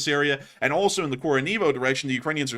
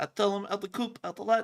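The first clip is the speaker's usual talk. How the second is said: high-pitched mock prisoner babble. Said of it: "He's gonna be telling".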